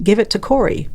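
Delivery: ordinary delivery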